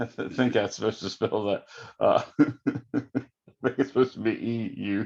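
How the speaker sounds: slow delivery with chuckling laughter. Trying to spell a particle's name while explaining, laughing at yourself. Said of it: "I'm laughing at myself".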